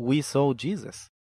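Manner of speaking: plain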